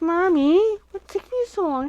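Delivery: impatient, restless little dog voice, very high. Voicing the restless dog Buddy while crafting: voicing Buddy the dog. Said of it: "It's like".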